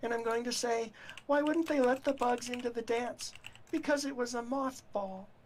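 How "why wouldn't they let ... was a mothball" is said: usual speaking voice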